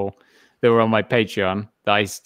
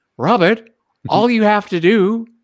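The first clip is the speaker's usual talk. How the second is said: very high, loud, slow, stretched-out, drawn-out delivery; 12 semitones higher, 5 dB louder than usual. Retelling a friend's advice about the podcast, imitating Josh. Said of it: "my impression of Josh".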